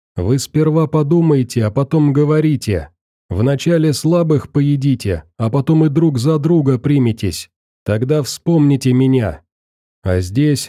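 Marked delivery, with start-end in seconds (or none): none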